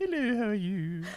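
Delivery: put-on very high old British lady voice. A player tries out the voice of the group's healer character: Charlotte's old British lady voice. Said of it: "So she's an old British lady".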